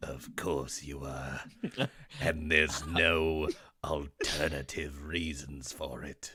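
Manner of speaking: hateful evil-emperor voice, every word dripping hate. Recounting voicing a hateful priest replying to people saving the town, Palpatine voice. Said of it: "I just made him sound like Palpatine".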